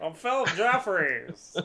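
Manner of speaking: put-on high-pitched old Western cowboy movie voice. Doing an old Western version of a character's line: Jimmy Stewart voice. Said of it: "I don't know if that's really an imitation".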